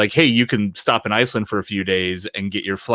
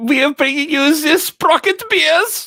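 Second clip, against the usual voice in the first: very high, loud put-on German accent; 6 dB louder than usual. A man urged by the others to do his German accent, mock German accent. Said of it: "Jason has the best German accent".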